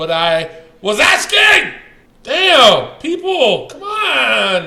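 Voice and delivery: slow, loud, drawn-out yelling. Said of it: "Stop yelling".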